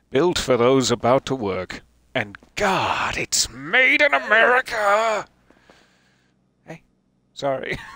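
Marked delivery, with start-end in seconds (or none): 2.1-5.2 drawn-out, climbing, very high, slow rising yell. Reading a truck label aloud while streaming a game: shouting. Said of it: "I didn't mean to shout at you there".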